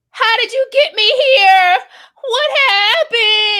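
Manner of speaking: shrill, very loud, very high, drawn-out voice. Retelling a movie scene, imitating Tammy waking from a spell: imitating Tammy's voice. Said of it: "That's literally how she sounds".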